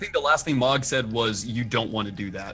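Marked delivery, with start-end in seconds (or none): 1.5-2.5 mock-threatening, put-on menacing tone. Player recapping what the character Mog last said, mock-threatening tone. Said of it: "in kind of like a threatening tone".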